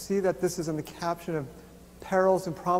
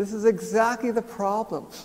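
ordinary talk

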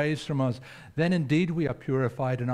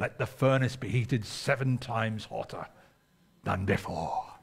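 sudden low put-on Scottish accent; 4 semitones lower than usual. Speaker quoting a line said at the end, in a Scottish accent. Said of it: "Why did I go into Scottish accent?".

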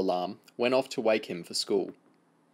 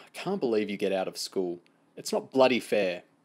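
plain reading voice

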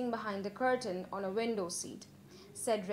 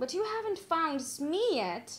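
high, griping, complaining whine; 6 semitones higher than usual. First-person narrator answering companions who have been waiting, complained. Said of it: "I complained".

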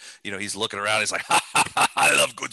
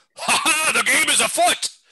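big booming voice, very high pitched; 5 dB louder than usual. A game master voicing a character to the players, Seventide's booming voice. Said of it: "Seventide's booming voice go".

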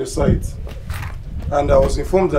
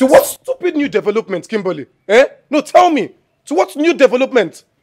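yelling angrily; 10 semitones higher than usual. Confronting Kimberly during a skit: angry shouting. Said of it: "How dare you shout at my sister like that?".

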